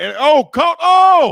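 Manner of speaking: very loud, high-pitched, shrill yelling. Commentating a football play as it unfolds, yelling. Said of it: "sorry for yelling".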